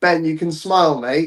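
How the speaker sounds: high, jeering called-out shout. Retelling a concert-goer calling out to the performer: imitating someone shouting. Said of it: "someone shouted out".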